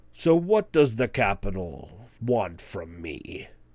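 slow, lumbering, drawn-out giant voice. Voicing a lounging hill giant greeting approaching guests: hill giant voice. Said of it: "he rubs his belly, and he goes".

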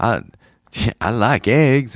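every word stretched out slowly. Imitating an actor's line from a movie: Samuel L. Jackson impression. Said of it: "That's a great Samuel, that's a great Samuel L. Jackson".

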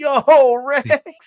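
very high, very loud, excited yell. Speaker recalls seeing Rex and retells their own yell. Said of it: "I just yelled out".

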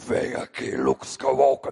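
loud, rasping, creaky, menacing villain voice. Retelling how an old woman spoke to him while he preached, in Darth Vader's voice. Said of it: "falou com a voz do Darth Vader".

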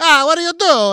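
put-on shrill, booming, very high, over-the-top Italian grandmother voice. Imitating Italian grandmothers shaking their fists: imitating an Italian grandmother. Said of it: "the thing that Italian grandmothers do where they're like".

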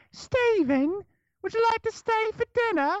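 put-on high British accent. Speaker imitates a buddy's british mom, in a british accent. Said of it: "my buddy's mom is British".

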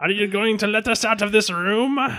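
very high, villainous cartoon voice. Voicing a pirate asking over the comms to be let out: Skeletor voice. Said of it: "I'm actually going more for Skeletor".

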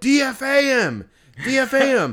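play-acted very high, slow, stretched-out shout. Retelling what he yelled as a player was pulled from the game: retelling a yell. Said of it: "I yelled".

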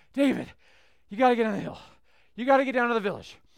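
put-on breathless, very loud panting. Retelling a man climbing a hill to call David down, imitating someone out of breath. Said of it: "he's out of breath, and he's trying to say".

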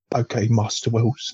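put-on English butler voice. Imagining a film line as Michael Caine would say it: Michael Caine as Alfred. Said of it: "that's now how I imagine Michael Caine to talk".

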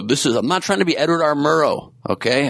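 sort of yelling, but only mildly. Speaker talking to listeners, unintentionally starting to yell; yelling. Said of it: "I don't know why I'm yelling".

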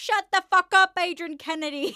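put-on very loud, high, heckling old man voice. Retelling what an old man behind said during the announcement: imitating an old man heckling. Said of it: "this old man behind me saying".

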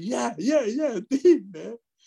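very high-pitched, wheedling, begging tone, pitched way up. Retelling the partner outside the door asking to be let in: imitating Cheech begging. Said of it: "they could hear his voice".

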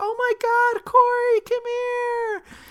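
high, loud, excited squealing call. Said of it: "the bar staff was like".

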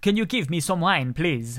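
rubbish, poor Spanish accent. Mocking how some people ask for wine in Spanish, rubbish Spanish accent. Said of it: "a rubbish Spanish accent".

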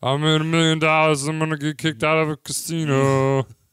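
put-on loud, high drunk frat guy voice. Talking about characters at a craps table, imitating a drunk frat guy. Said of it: "some drunk frat guy who's like".

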